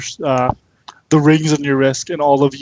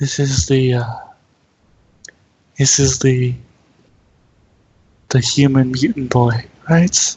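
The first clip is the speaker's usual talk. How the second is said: telepathic voice heard only inside the head. Voicing a Roserade heard inside the listener's head, in a very quiet Roserade voice. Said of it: "a very quiet voice say".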